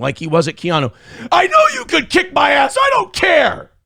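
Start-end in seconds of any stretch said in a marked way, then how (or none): 1.3-3.6 mock very high, shrill screaming shriek. Retelling how a drunk man screamed in his face: imitating someone shrieking. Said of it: "he screams in my face, shrieking".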